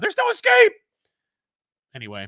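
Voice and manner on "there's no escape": put-on screaming fighter voice, very high, very loud. Retelling a video game moment: imitating Scorpion screaming. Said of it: "Scorpion screams at his opponent".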